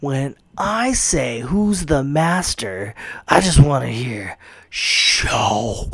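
slow, heavily enunciated, every word spelled out. Retelling an awesome line Sho'nuff says; enunciating like Sho'nuff. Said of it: "He enunciates it like that".

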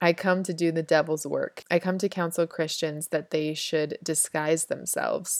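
ordinary talk

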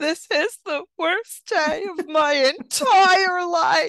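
play-acted, very high, drawn-out sobbing wail. Retelling what Nico said in the car while leaving: imitating Nico weeping. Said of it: "he's just weeping, weeping, and he goes".

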